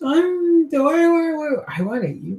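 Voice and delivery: high, halting, hungry monster voice. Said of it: "The other one goes".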